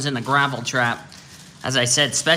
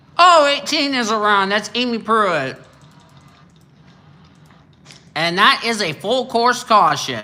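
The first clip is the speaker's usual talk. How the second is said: loud, high talk through a mouthful; 8 semitones higher, 5 dB louder than usual. Commentating on a race while eating pizza, talking with mouth full. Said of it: "I was eating pizza in my mouth".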